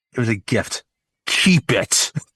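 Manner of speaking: put-on angry voice. Retelling a film scene with Arwen returning a gift: imitating angry Arwen. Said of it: "she is angry at him".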